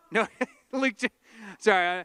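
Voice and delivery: speech broken up by laughter. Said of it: "I'm just laughing".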